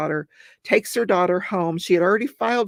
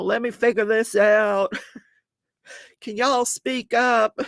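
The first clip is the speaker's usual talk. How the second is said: put-on Tennessee Southern drawl; 3 semitones higher than usual. Imitating a judge in a murder trial: imitating a judge's southern drawl. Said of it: "he's got this Southern drawl".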